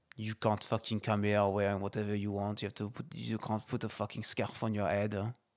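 speaking with a fake French accent. Repeating the line after being asked to: French accent. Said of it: "Say it in a French accent".

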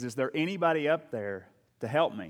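ordinary delivery

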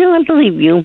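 very high voice, cracking and breaking. Asked whether a past-life reading feels true or is nonsense, the listener answers, voice cracking. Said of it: "Your voice just cracked".

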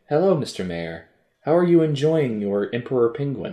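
insinuating, loaded, suggestive put-on character voice. Imagining what a character says, in a suggestive character voice. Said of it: "in that voice".

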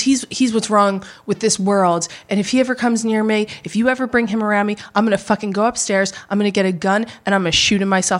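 put-on straight-faced delivery. Retelling what a mother said about a man: imitating a deadpan threat. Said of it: "she says this completely straight face".

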